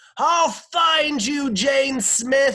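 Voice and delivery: full-throated, very high, very loud, drawn-out shout. Mrs. Drizzell, in an old rowboat, calls after someone fleeing by motorboat; shouting. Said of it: "she shouted into the darkness".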